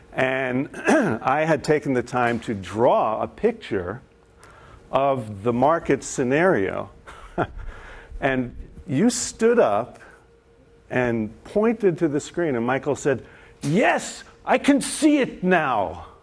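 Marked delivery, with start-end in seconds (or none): 13.6-15.9 put-on German accent, high-pitched and slow. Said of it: "German accent?".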